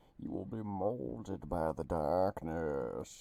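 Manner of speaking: low, slow booming voice, muffled as into a cup. Playing a father raising child Banes, speaking to his child: Bane voice. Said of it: "why are you talking like that?".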